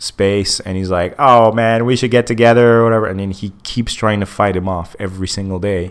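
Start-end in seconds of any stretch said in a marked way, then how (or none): 1.2-2.8 put-on nasal, annoying salesman voice, louder.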